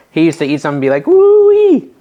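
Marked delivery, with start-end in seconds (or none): 1.0-1.8 loud, very high-pitched shriek. Imitating a man on a cooking channel reacting to food: imitating a screamed woo-wee. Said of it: "do the scream thing".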